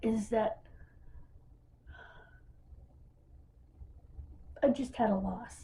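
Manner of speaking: holding back tears. Apologizing mid-story while talking about a family, holding back tears. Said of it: "I'm sorry".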